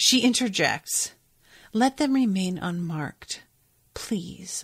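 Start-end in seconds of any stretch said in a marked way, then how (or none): 1.7-4.6 quiet and soft. Reading from a book, the speaker voices the narrator's interjection: soft. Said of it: "I said softly".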